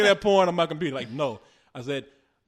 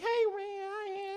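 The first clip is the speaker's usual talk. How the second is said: put-on kid voice, much higher, quieter; 11 dB quieter than usual. Retelling what he heard coming from another man's room: little kid's voice. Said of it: "I hear like a little kid's voice".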